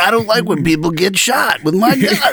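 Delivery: very high, strained voice pushed out. Quoting a cop movie, after a friend asks about it: Nick Nolte impression. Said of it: "taking a crap in the morning voice".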